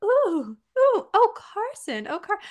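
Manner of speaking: put-on very slow, high, cute, sing-song British accent. Retelling grandma watching a boy run, in a cute british accent. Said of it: "she had this cute little British accent".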